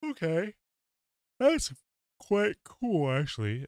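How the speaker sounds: very high, loud words spoken through a yawn. Playing a game at 1 a.m., yawning. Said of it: "Sorry, I am yawning".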